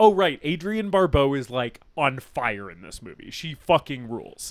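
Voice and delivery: ordinary talk, nothing marked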